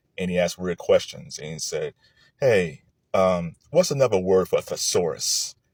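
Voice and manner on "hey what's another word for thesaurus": put-on flat, deadpan monotone voice. Quoting a comedian's joke: Steven Wright monotone. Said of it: "he always talked in monotones".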